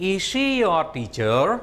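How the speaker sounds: rising tone, pitch climbing on "teacher". Teaching intonation, a question said with rising tone on teacher. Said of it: "Rising tone. It's a question".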